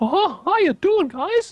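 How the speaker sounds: voice pushed very high and loud. Demonstrating the contrast to how you usually sound, in an unusually high voice. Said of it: "I've ever heard your voice that high".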